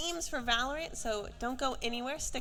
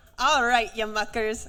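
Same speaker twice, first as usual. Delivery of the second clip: very loud, put-on Scottish accent; 2 semitones lower, 10 dB louder than usual. Greeting the audience before asking them to rate it: put-on Scottish accent. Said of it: "Rate my Scottish accent".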